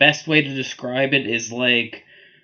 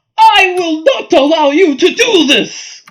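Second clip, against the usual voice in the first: piercing, very high, very loud shriek; 11 dB louder than usual. A game master voicing a woman confronting the party, screaming. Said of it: "She screams".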